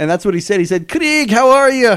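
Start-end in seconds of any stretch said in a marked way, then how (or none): 0.9-2.0 put-on very high, slow, muddled, unconvincing Scottish accent. Retelling how a Scottish caller greeted a friend on the phone, in a Scottish accent. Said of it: "a Scottish guy that phoned him".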